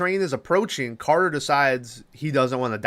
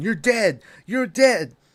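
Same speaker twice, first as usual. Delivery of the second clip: acted-out yelling, pitched up; 6 semitones higher than usual. Retelling the same scene as the metal shakes: imitating Stifler yelling. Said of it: "as Stifler is yelling".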